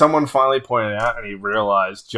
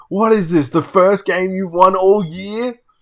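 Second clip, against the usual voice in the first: furious, fuming, raging rant, pitched up; 8 semitones higher than usual. Retelling a game night where a player storms around after losing: imitating Larry raging. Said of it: "a raging person".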